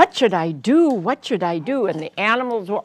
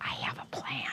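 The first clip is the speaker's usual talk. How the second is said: whispered, much quieter and lower; 7 semitones lower, 19 dB quieter than usual. Reading a story where the lion tells the bear a plan: whispering. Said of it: "the lion whispered to the bear".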